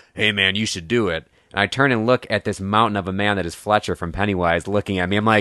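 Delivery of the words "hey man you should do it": booming, dark, deep voice. Telling a story, the speaker quotes a man behind him in Fletcher's booming deep voice. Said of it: "booming, dark, deep voice go".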